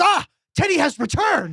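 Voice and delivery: very high, swooping, drawn-out slow yelling. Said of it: "just sitting there yelling at this".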